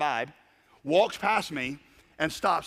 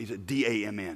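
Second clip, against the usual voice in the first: hushed half-whisper, very slow and drawn-out; 7 semitones lower, 4 dB quieter than usual. Retelling a new believer's awed reaction: imitating someone half-whispering. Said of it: "He kinda whispered".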